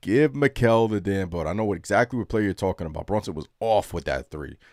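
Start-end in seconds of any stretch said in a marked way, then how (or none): 0.0-1.5 loud, drawn-out, frustrated screaming. Retelling watching the game on TV: retelling screaming at the TV. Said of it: "I I kept screaming it".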